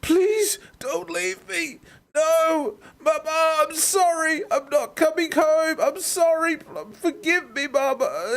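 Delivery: very high, slow, weeping sobbing voice. Retelling a shot soldier bleeding out and calling for his mother, imitating someone sobbing. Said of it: "he's sobbing his eyes out".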